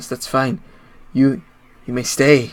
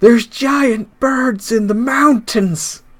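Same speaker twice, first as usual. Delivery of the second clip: high, loud, shrill shout; 11 semitones higher, 5 dB louder than usual. A character turns around and shouts back at the farm, shouting. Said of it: "shouts back at the farm".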